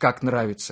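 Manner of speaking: usual speaking voice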